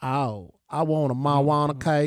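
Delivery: put-on Southern drawl accent. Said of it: "I started talking like one of 'em again".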